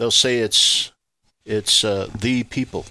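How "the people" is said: emphatic stress on "the" in "the people". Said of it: "Emphasis on the word the".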